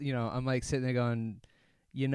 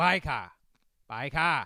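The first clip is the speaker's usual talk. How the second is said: put-on called out in an old British gent's voice; 4 dB louder than usual. Speaker retells a man yelling at people ahead, old man British accent. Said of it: "in his old man British accent".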